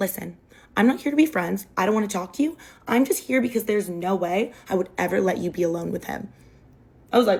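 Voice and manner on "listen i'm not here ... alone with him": confiding, frank, blunt, dismissive tone in lowered voice. Retelling what a girl said to her: imitating a lowered voice. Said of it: "she lowers her voice".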